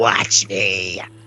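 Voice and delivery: deep, menacing, very dark, very low voice. Voicing a character emerging from a vat of goop: very dark voice. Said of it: "this very dark voice".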